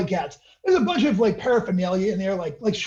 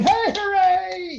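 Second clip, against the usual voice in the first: tipsy cheer, squeaky and very high; 11 semitones higher than usual. Voicing a paramedic who says they had a few: tipsy paramedic voice. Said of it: "weaving a bit and applauding".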